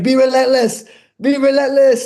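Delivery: acted, very high, urgent, loud scream. A fighter recalls the man in his corner coaching, retelling the screaming. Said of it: "he's screaming at me".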